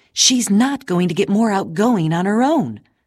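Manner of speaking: sharp, pointed tone. Narrator reads Clara's mother talking with Clara's father, overheard by Clara, said sharply. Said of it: "Clara heard her mother say sharply".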